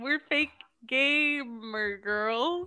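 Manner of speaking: very slow, dragged-out, deliberate, stretched-out delivery. Imitating a friend's podcast intro line, laughing at it: imitating Erin. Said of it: "you go".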